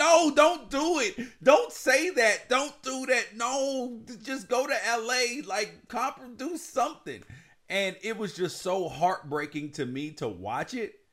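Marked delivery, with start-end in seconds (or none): 0.0-7.2 very high, loud shouting. Recalling watching a heartbreaking story, acting out yelling at the TV. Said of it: "yelling at the TV like".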